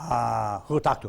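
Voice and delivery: imitated Mexican accent. Retelling a phone call from a drug supplier: imitating a Mexican accent. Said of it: "Mexican accent".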